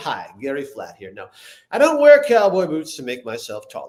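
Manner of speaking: smarmy, oily character voice with swooping pitch. Acting out a pitched character who answers a question: smarmy Gary Flat voice. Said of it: "I'm literally doing the voice of the guy".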